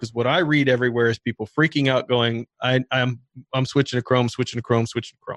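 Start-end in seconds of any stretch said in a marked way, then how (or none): none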